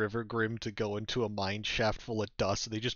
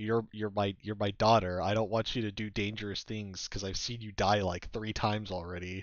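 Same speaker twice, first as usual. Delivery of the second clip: ordinary delivery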